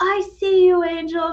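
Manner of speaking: mock very high, carrying scream. Retelling a supporter screaming from the sidelines: imitating someone screaming. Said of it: "I hear Amanda just scream".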